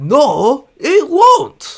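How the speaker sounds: very high, very loud, shrill, full shout. Doing Watto quotes from memory: Watto impression. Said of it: "I need Watto quotes".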